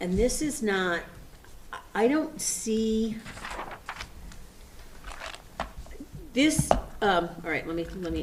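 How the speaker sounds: stumbling, stuttering, halting speech with stammering restarts. Speaker on a call with Rajan about a warrant, stuttering. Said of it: "I'm stuttering and I don't mean to".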